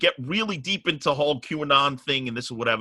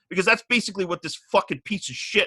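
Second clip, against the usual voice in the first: increasingly agitated rant, pitch rising; 6 semitones higher than usual. Telling another speaker about being targeted online: getting riled up. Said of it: "you can see I'm getting really riled up".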